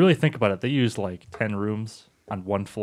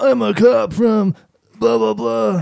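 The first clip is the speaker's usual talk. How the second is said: put-on very loud, high, slow, shrill eighties pretty-boy dub voice; 12 semitones higher, 9 dB louder than usual. Imitating the English dub voices of an old trailer: stock eighties pretty boy voice. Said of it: "the stock eighties pretty boy voice".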